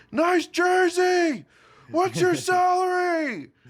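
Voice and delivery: play-acted very high, drawn-out, jeering taunting yell. Recalling screaming across the way when things went right; retelling a taunting shout. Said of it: "I'm screaming across the way like".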